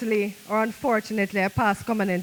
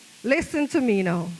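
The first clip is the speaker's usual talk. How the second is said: plain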